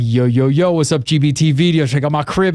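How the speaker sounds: hopped-up, drawn-out hip-hop show host voice. Recalling a voiceover done in character for a cribs-style video, hip-hop host voice. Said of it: "it was all hip hopped up".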